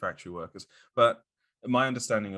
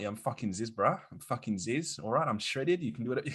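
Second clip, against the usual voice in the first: put-on Australian accent, pitched higher; 5 semitones higher than usual. Imitating a dead online figure's videos: imitating Zyzz in an Australian accent. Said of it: "a good Australian accent".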